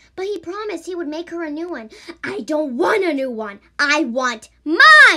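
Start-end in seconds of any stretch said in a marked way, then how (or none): 2.2-5.1 very loud, drawn-out, slow, furious angry scream. Reading a ghost story, a ghost screams at the man who took her arm: screaming in anger. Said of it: "she screamed in anger".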